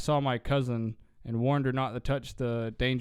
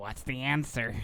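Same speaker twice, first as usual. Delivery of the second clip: creepy, sinister evil clown voice. Retelling a dream about a talking toy: evil clown voice. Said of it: "this evil clown voice that would".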